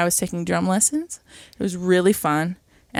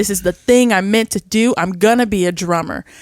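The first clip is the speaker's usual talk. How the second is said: put-on over-dramatic voice, louder; 5 dB louder than usual. Retelling a Gilmore Girls scene about wanting to drum: dramatic imitation of Lane. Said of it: "it's so dramatic".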